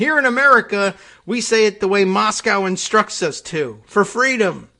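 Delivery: high, loud, angry insistence. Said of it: "she was insisting".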